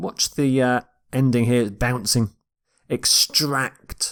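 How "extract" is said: extract with weight on the second syllable -tract. Modeling the word's pronunciation for learners: extract, stress second syllable. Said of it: "You stress the second syllable here".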